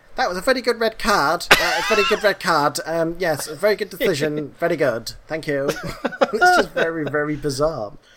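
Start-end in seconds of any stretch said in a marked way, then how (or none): 0.2-5.7 squeaky, really high-pitched put-on voice. Imitating a man reviewing the previous day's game decisions: put-on high-pitched voice. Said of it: "he's got a really high-pitched voice, he goes".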